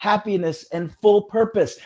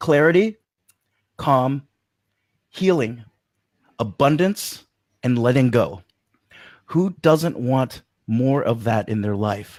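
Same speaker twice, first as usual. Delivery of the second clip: very slow, deliberate, word by word, stretched out; 8 semitones lower than usual. Addressing y'all in case the connection cuts off, going very slow. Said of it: "So I'm going to go real slow".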